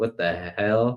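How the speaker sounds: genuinely confused, truly baffled outburst. Retelling the dance off scene: imitating Ronan's genuine confusion. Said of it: "genuine confusion".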